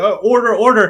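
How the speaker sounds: pompous British judge voice. Telling a story about a trial, imitating a pompous british judge. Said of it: "he's like this very pompous guy".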